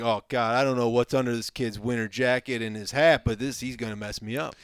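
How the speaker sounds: ordinary delivery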